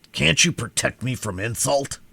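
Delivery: gruff, angry, growling voice. Reading a story aloud, the Sawhorse asking to be protected: growled. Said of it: "he growled".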